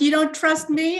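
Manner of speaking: put-on loud voice. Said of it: "an actual loud voice said".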